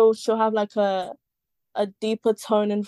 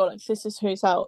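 ordinary talk

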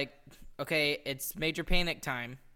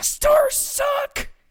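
shrill, very loud, high-pitched furious yell; 12 dB louder than usual. With the kids asleep, trying to vent quietly about the team, angry, not quiet. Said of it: "that was not quieter".

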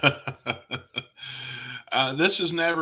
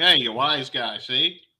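put-on slow, drawn-out old-time slapstick voice; 4 dB louder than usual. Imagining how another team member would talk: Three Stooges voice. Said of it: "It'd be funny if Beto talked like".

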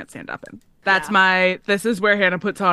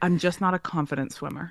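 mock-serious, quieter voice; 6 dB quieter than usual. Quoting a man who insisted on bringing a flotation device into the lake: mock-serious voice. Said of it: "in this very serious voice".

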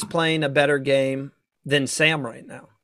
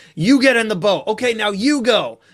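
mock military-style barking, pitched up; 6 semitones higher, 4 dB louder than usual. Retelling how Mark ran the boat challenge, imitating Mark barking orders. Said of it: "he was barking like".

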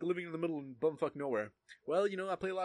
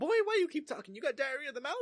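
sassy voice, pitched very high; 12 semitones higher, 3 dB louder than usual. Retelling what a chemistry teacher said to a talkative student: imitating Miss Haskin's sassy voice.

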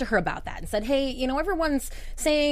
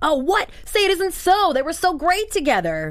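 loud, swooping, exaggerated put-on sarcasm; 4 semitones higher, 6 dB louder than usual. Reading a comment about the breakup aloud: reading a comment sarcastically. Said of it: "Sarcasm, she points out".

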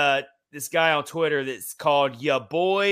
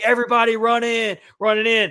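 put-on loud, high-pitched, urgent yell; 7 semitones higher, 5 dB louder than usual. Retelling a video filmed inside a store during a tornado: imitating someone yelling.

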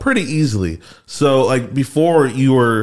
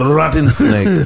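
terrible, high, fake Haitian accent; 5 semitones higher, 3 dB louder than usual. Wonder aloud to the others whether this is a Haitian thing, in a bad Haitian accent. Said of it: "That's not even a Haitian accent".

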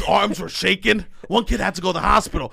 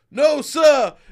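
high, loud shout like a military recruit. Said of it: "I go".

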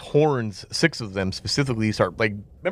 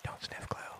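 eerie, barely audible, hushed whisper. Narrating an adventure, a voice from down the hall speaks in a strange whisper. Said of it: "a strange voice just whispering".

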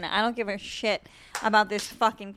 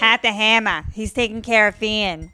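put-on, tough-sounding Boston accent. Giving the listener a new character nickname: boston accent. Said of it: "I'll do with a Boston accent".

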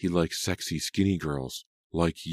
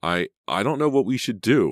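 stammering, higher pitch; 5 semitones higher, 6 dB louder than usual. Selena, in a stopped car, speaks to her friend Katie; stammering. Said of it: "Selena stammered".

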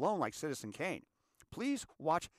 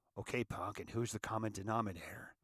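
low, dropped film-hero cowboy voice; 5 semitones lower, 4 dB quieter than usual. After listing everyone you hate, put the question in your best Clint Eastwood voice. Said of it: "And my best Clint Eastwood voice?".

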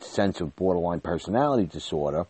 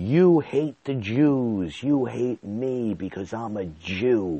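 play-acted very slow accusing outcry, one word stretched; 5 semitones higher than usual. Retelling a mother screaming at an aunt: imitating someone screaming. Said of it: "my mother screaming at my aunt".

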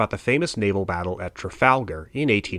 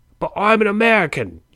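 put-on thick Cockney accent, very high-pitched and loud; 12 semitones higher, 5 dB louder than usual. Acting out a seized sailor protesting to the Royal Navy, in a thick Cockney accent. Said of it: "you protest in your thick Cockney accent".

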